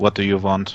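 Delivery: deep, low demonic voice. Answering a rustling voice in a game, speaking Demon: low voice speaking Demon. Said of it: "with a low voice, uh, in Demon".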